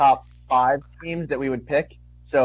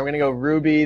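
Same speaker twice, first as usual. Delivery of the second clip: ordinary talk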